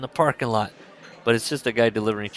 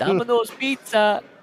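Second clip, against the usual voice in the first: bad fake Indian accent, much higher pitch; 12 semitones higher, 4 dB louder than usual. Describing a man sticking his head in the door, in a bad Indian accent. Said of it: "it's a bad Indian accent".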